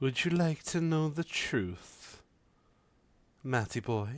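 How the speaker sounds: high, strangely feminine voice. Voicing a mysterious voice heard in a player's mind: oddly feminine voice. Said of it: "The voice is oddly feminine".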